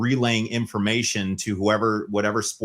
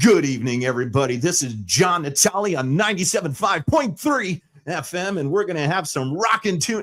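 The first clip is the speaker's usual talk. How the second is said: fake radio DJ announcer voice, pitched up; 8 semitones higher than usual. Showing how people's voices change when asked to sound like radio; put-on radio DJ voice. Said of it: "how they just their voice changes".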